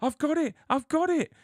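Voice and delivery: put-on very high, frantic diva outburst. Retelling rushing to an airport check-in desk, retelling a frantic shout. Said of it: "I shouted at the woman".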